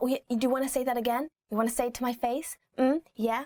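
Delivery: mock passive-aggressive, needling, daring tone. Acting out a phrase parents say: imitating a passive-aggressive mother. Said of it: "a classic passive-aggressive mother".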